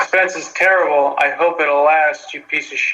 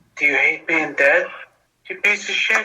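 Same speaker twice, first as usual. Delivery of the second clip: movie tough-guy, action-hero voice. Quoting a character's reply from a film scene, doing a Steven Seagal impression. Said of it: "Steven yeah. Seagal. ... the voice, I got the voice there".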